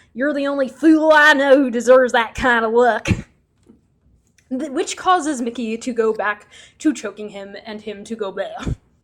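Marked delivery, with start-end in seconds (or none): 0.2-3.1 put-on extreme, broad Texas accent, laid on thick, loud. Retelling a story, voicing the man who gives Mickey the monkey paw, extreme Texas accent. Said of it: "in his extreme Texas accent".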